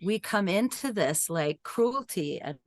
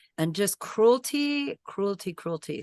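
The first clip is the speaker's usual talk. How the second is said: ordinary delivery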